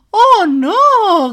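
very loud, high cry with a drawn-out "no". Narrator reading a story; the piglet cries out as the fox opens the door, cried out. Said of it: "gritó el cerdito".

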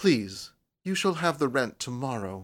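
low-toned voice. Narrating, the tenant answers the landlady's demand for rent, in a low tone. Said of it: "said June in a low tone".

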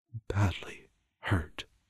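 quiet, soft-spoken, low-key, understated delivery. The visitor answers the mother's question, said quietly. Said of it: "he said quietly".

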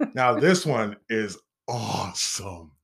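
excited, enthusiastic, eager. Telling a listener about the next story, excited. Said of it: "you sound excited".

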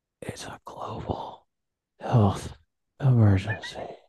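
loud, creepy whisper very close to the mic. Mocking a politician's speech, getting close to the mic: imitating Biden's creepy close whisper. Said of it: "Gets really close to the mic, and he holds it".

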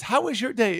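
mock cheery tone. Retelling what a woman asked him at first, imitating her sounding happy. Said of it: "she's all happy at first".

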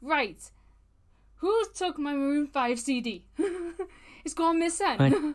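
put-on Welsh accent. Quoting a woman in a retold story, in a Welsh accent. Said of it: "when we did that Welsh accent".

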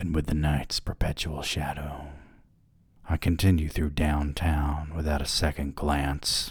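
sultry, sexy, seductive reading voice. Rereading a passage of their story aloud, the speaker reads it in a sexier voice. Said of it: "read that part again in like a sexier voice".

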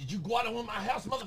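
shrill, rushed yelling, very high-pitched. Addressing the bat loose in the house: yelling at the bat. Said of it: "Quit yelling at him".

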